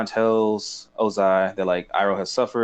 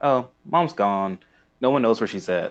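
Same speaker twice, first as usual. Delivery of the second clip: cold, heartless, uncaring tone. Retelling how Azula answers Zuko, imitating a heartless reply. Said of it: "she's completely just heartless".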